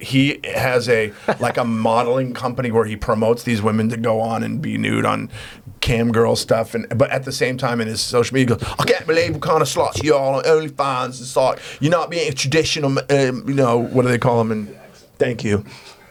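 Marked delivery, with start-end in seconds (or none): 8.8-13.8 clumsy, terrible fake British accent. Mocking a man's social media posts, doing a terrible British accent. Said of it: "It's a terrible accent".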